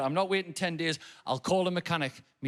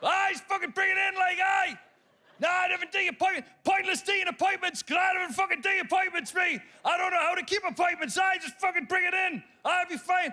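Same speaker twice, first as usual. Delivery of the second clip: put-on loud shouting Geordie accent, higher pitch. Retelling calling a mechanic, imitating a loud Geordie mechanic. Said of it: "talk like the deaf".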